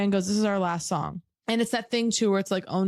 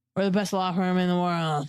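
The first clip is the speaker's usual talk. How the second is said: put-on heavily drunk man voice. Retelling what a drunk lawyer said at a party: imitating a hammered drunk lawyer. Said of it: "This hammered drunk lawyer comes over to me".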